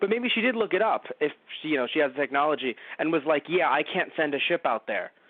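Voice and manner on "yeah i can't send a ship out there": plain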